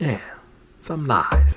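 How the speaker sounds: short eerie, sinister, creepy put-on voice. Ending a bit of good ai news, in a creepy voice. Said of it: "That was a creepy voice".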